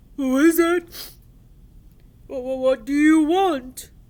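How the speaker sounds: frightened, whimpering monster voice, very loud. Reading a story aloud, the narrator voices the monster as it whimpers. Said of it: "he whimpered".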